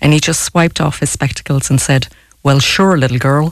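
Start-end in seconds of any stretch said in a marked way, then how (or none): 2.4-3.5 put-on American drawl. Retelling how a man answered her request, in an American drawl. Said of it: "In his best American drawl".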